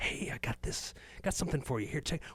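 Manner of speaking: quiet, secretive whispering. Retelling a video where a guy in a trench coat approaches someone: imitating someone whispering. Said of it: "he's whispering".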